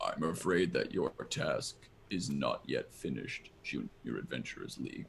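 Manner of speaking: very quiet, deep, hushed delivery. Voicing a character praising the adventurers: speaking very quietly and deeply. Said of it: "speaking very quietly and very deeply".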